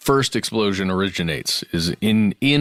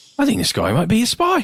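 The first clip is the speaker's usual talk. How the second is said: put-on a bit of cockney accent, very high; 12 semitones higher than usual. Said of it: "that is kinda Cockney".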